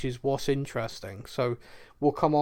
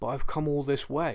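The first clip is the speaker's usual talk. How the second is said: play-acted, slightly cracking, faltering delivery. Retelling what Mando says to Ahsoka: imitating a voice breaking a little. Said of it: "his voice breaking a little".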